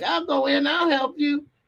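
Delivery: very high, eager, helpful lady voice.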